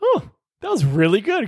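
high, wide-ranging pitch, mock admiring gushing tone.

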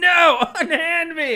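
mock shrill, very high, loud shriek. Praising a character's big moment, the speaker acts out her scream. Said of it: "finally her moment to scream is just".

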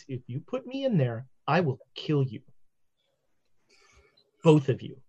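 very low, very quiet, hushed menacing voice. As a cat speaking perfect English to two people, in a very quiet voice. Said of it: "says in a very quiet voice".

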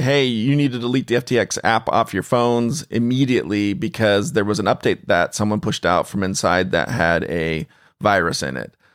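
normal talking voice

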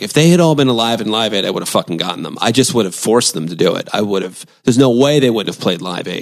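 usual speaking voice

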